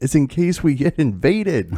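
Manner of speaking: mock very high hollered yell. Retelling what a drunk friend said at the sink, imitating someone yelling. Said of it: "turns around and yells".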